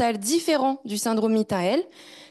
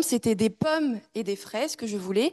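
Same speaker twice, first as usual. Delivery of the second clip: pommes stressed as key word; 3 dB quieter than usual. Showing french word stress in a sentence, stress on pommes. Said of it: "le mot accentué, c'était le mot pomme. J'ai mis le ton sur, cette, sur ce mot-là".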